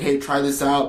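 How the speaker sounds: ordinary delivery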